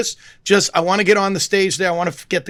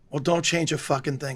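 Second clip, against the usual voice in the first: put-on dead serious tone, lower and quieter; 4 semitones lower, 7 dB quieter than usual. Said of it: "dead serious".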